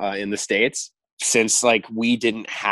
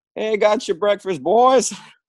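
put-on really nice Southern accent, very high pitched; 12 semitones higher, 3 dB louder than usual. Retelling how a man brought the boys breakfast, in a really nice southern accent. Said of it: "says in like a really nice Southern accent".

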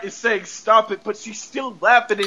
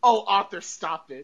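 put-on laughing woman's voice, quieter; 5 dB quieter than usual. Imitating Mrs. Hart telling Arthur to stop: Mrs. Hart laughing while speaking. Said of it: "And then she's laughing".

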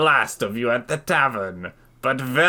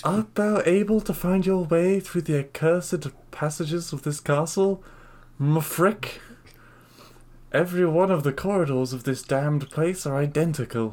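put-on damsel voice; 4 semitones higher than usual. Playing a castle adventure, speaking the damsel's line, damsel character voice. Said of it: "Let's just use her voice".

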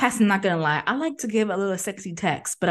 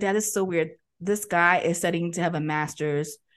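normal talking voice

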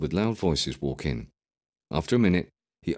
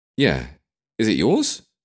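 raised, pitched-up voice, slow; 5 semitones higher, 6 dB louder than usual. A passenger asks the driver a question as the car climbs a hill; raised voice over engine noise. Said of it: "trying to be heard over the sound of the engine".

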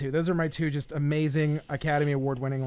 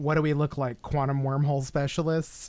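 ordinary talk

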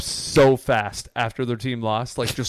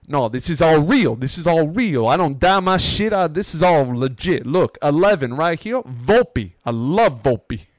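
loud Italian New York dude voice. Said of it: "and he's like".

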